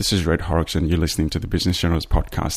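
ordinary talk

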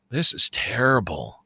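acted, drowsy, half-asleep, hazy voice. Retelling Laura's remark on a TV show: imitating Laura half-asleep. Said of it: "she says in a sleepy haze".

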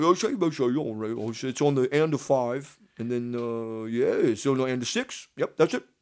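put-on accent from Brighton. Speaker quoting a man from Brighton, England; imitating an English Brighton accent. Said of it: "he's from Brighton, England, and he talks like this".

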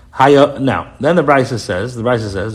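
plain

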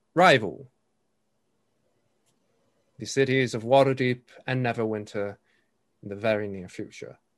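amplified carrying voice without shouting. Voicing a speaker welcoming a party crowd: amplified carrying voice, not shouting. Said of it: "almost as if an amplified voice, but at no point is he shouting".

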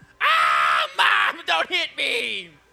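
very slow, loud, swooping, drawn-out joke grito. Showing the others a joking version of the mexican grito: joke grito yell. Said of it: "This is how I do my Mexican grito".

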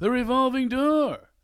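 belted out, high-pitched and loud. Retelling how a friend teases about assistants: Seinfeld impression. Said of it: "He says it like Seinfeld".

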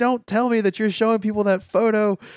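very high, loud scream. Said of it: "she starts screaming into the phone".

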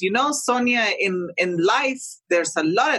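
put-on thick Argentine accent. Retelling what a father from Argentina said: imitating dad's thick Argentine accent. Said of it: "he's got this thick accent".

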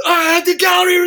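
very high, loud, crazed screaming. Retelling crazy New Yorkers coming into the art store: imitating someone screaming. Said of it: "crazy New Yorkers would come in screaming".

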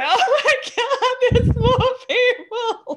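play-acted, very high, slow, weepy, tearful outburst. Retelling ringing the bell for new members, retelling own tearful words. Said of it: "tears flying down my face".

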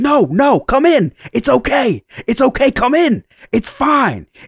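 put-on positive yelling. Retelling what a man said after being walked in on: retelling a friendly yell. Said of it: "positive yelling".

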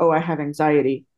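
ordinary talk

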